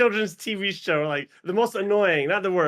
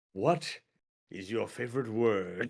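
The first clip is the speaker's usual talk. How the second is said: terribly low, hushed, very slow intoning; 9 semitones lower, 9 dB quieter than usual. Asking a guest an interview question in a terrible James Lipton voice. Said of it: "it's a terrible Ja-, it's not James Lipton at all".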